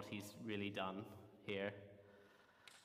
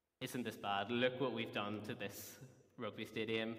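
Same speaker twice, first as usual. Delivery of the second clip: ordinary talk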